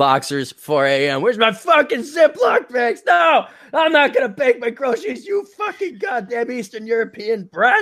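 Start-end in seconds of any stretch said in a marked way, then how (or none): 1.2-7.8 put-on very high-pitched drunken ranting voice. Speaker pictures the other person drunk at 4 a.m.: imitating a drunk rant. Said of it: "I'm just picturing you drunk".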